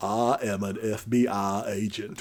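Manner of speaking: very slow, drawn-out character voice, each word stretched. Asked to say an FBI agent line in Forrest Gump voice. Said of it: "in the Forrest Gump voice".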